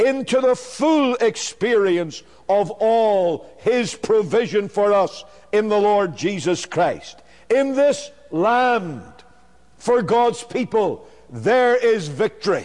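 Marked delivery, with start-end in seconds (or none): 0.0-3.9 emphasis placed on the word "full". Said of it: "let me emphasize the word again".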